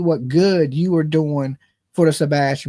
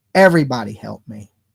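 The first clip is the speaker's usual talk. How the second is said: desperate, imploring, pleading voice; 6 semitones lower than usual. Acting out a real parent asking everyone for help: mock begging and pleading. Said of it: "would be begging and pleading".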